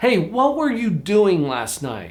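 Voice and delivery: high, slow, threatening, judgmental accusing tone.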